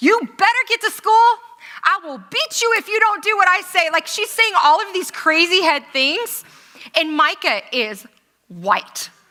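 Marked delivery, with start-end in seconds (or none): 0.0-3.9 loud, high-pitched screaming. Retelling how a woman yelled at two kids from a car window, imitating someone screaming. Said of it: "she starts screaming at them".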